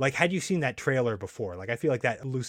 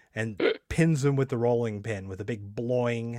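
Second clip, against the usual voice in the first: ordinary talk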